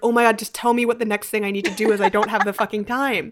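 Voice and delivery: mock-stressed, exasperated tone. Recalling constantly running out of time; retelling exasperated stress. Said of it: "I just like was constantly stressed".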